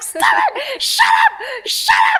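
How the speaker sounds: put-on very high, tearful child's yell, drawn-out crying. Retelling being nagged by him during a scary game as a child, retelling crying and yelling. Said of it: "And I'm just like crying".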